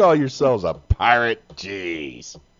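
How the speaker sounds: swashbuckling pirate voice with "Jeez" drawn out. Showing others how a pirate should talk, in a pirate voice. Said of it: "Your tone is all wrong. It's like this".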